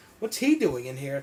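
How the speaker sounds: normal talking voice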